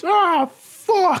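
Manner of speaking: put-on very high, loud yell. Retelling a wrestler being suplexed: imitating Ahmed Johnson yelling. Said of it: "Ahmed just yells".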